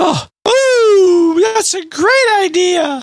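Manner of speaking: ooh pitched very high and drawn out. Asked to say it in a different tone of voice, Mickey Mouse voice. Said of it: "My Mickey Mouse voice".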